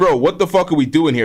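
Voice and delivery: ordinary delivery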